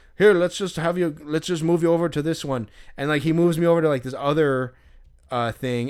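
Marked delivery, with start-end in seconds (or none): 0.2-2.7 put-on thick Irish accent, higher and louder. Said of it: "He's got this thick Irish accent".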